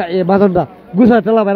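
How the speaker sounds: plain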